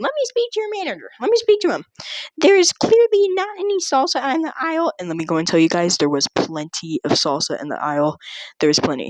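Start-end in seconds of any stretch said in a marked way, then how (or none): 0.0-4.9 very high, entitled, demanding voice. Retelling a customer's complaint to a store employee, imitating full Karen mode. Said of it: "the Karen went full Karen mode".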